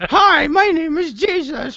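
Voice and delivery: very high, silly puppet voice. Joking about bodies paraded like puppets, speaking as Jesus: put-on voice for Jesus. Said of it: "that voice".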